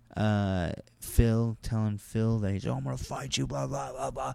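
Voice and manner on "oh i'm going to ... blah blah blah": high, rasping, rough, furious, aggressive angry voice. Retelling how a comic threatened another comic: imitating someone screaming angrily. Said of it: "He started screaming and cursing at".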